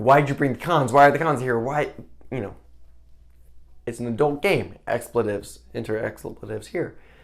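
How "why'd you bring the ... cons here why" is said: repeated, accusing shouting. Retelling how the people left down there reacted: imitating people yelling. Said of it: "start yelling".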